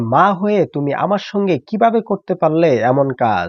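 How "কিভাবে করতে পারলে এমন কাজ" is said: ordinary talk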